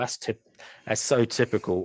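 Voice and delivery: ordinary talk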